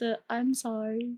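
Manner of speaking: tiny, soft, hushed little voice. In a roleplay, a character apologizing in a soft little voice. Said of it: "like a soft little voice".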